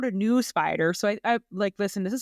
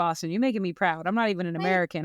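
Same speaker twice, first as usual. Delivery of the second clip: plain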